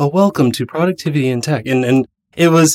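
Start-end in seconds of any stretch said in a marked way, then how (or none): 0.0-1.7 public-radio host delivery, right on the mic. Retelling opening an early show, close to the mic: NPR radio voice. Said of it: "I even put on my best NPR voice and got really close to the mic".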